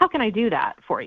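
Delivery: defensive-sounding tone. Demonstrating how not to ask John a question, in a defensive tone. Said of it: "sounds like you're trying to you know, be defensive".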